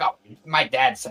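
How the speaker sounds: put-on annoyed, irritated girl voice. Retelling a scene where a girl snaps back: imitating a pissy girl. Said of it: "super pissy about it".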